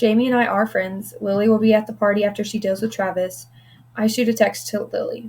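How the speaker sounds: plain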